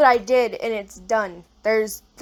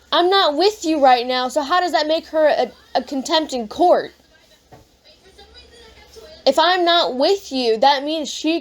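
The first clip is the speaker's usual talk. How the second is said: arguing voice pitched up; 6 semitones higher than usual. Arguing with a parent over school enrollment and custody, raised voice. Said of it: "please lower your voice".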